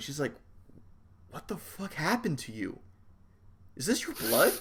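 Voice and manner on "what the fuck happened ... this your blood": furious, hushed, loud stage whisper. Voicing a character who sees blood all over a player: hushed angry loud whispering. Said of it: "she's doing this very hushed, angry, loud whispering at you".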